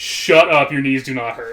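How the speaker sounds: loud, instantly exasperated voice. Retelling what a child's mom said in a store: imitating an exasperated mom. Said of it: "instantly exasperated".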